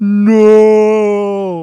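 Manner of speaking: loud, high, anguished cry.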